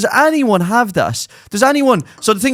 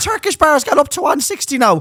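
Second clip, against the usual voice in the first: put-on old lady voice, higher; 6 semitones higher than usual. Imitating an old woman ringing to complain about prices: old woman caller. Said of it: "an owl one ringing you going".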